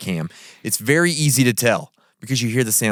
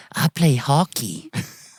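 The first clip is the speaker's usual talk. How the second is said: put-on Canadian boy accent drifting into British; 4 semitones higher than usual. Voicing an imagined Canadian ghost boy: Canadian boy voice slipping British. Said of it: "He kinda had a British accent there a bit".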